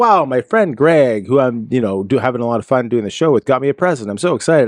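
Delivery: ordinary talk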